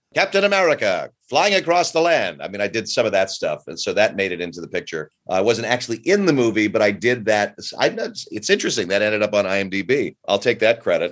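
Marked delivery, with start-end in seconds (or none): 0.2-2.4 put-on old-time 1940s newsreel announcer voice. A voice actor demos one of his movie voiceovers, 1940s newsreel announcer voice. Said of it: "The guys that talk like this".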